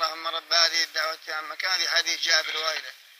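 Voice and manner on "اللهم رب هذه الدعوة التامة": plain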